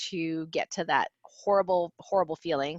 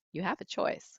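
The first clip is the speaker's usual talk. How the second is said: mock flat, emotionless, bland, nonchalant tone; 7 dB quieter than usual. Speaker retells what a voice kept repeating, imitating a flat, emotionless voice. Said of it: "very nonchalant, very bland, no emotion".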